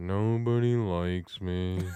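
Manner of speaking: low-pitched cartoon donkey voice. Showing others your impression and asking if it was good, in an Eeyore voice. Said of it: "doing Eeyore's voice".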